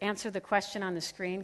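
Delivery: normal talking voice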